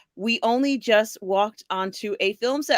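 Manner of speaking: ordinary talk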